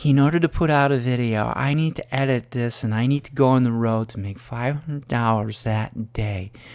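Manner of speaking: as soft as possible, hushed voice. Mocking how the man in the video talks: mocking imitation of his soft voice. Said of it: "So he talks like this".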